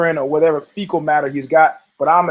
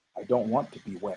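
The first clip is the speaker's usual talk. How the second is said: hushed, very soft, low murmur under the breath; 8 semitones lower, 14 dB quieter than usual. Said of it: "I say very quietly".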